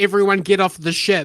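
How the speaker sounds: normal talking voice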